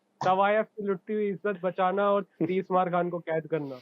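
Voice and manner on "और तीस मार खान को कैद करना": ordinary talk, nothing marked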